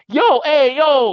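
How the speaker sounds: put-on South Jersey Italian accent. Retelling a bar owner catching them pouring shots, in a South Jersey Italian Guido voice. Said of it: "biggest motherfucking South Jersey uh Italian Guido ass voice".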